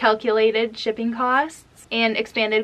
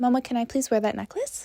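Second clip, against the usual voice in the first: put-on sweet, polite little girl voice, toddler-like; 4 dB quieter than usual. Retelling how a toddler asks for a necklace: imitating a toddler asking nicely. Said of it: "That's what she would say".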